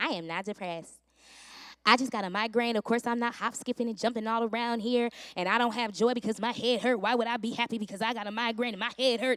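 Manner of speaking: mock sassy talking back with attitude. Retelling how she answered her mom back then, retelling with a sassy attitude. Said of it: "I had to get an attitude and be like".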